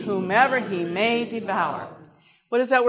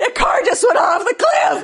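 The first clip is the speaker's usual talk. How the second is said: mock very high, freaked-out, panicked shout; 10 semitones higher, 6 dB louder than usual. Retelling seeing a car go off a cliff, retelling a panicked shout. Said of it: "I'm just like freaking out".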